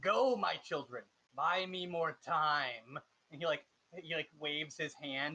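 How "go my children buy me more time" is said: reverberating villain voice. Narrating the scene, voicing the leader sending cultists forward, echoing villain voice. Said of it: "you can hear him in an echoist voice".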